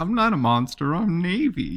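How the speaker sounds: put-on very high, tiny, cute little kid voice. Retelling taking away the tablet, acting out her reply: imitating Navy's little cute voice. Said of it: "in her little cute voice".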